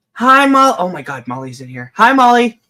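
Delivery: very loud shouting, right in the ear. Greeting molly, who has just come into the room: yelling. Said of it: "you're yelling in my ear".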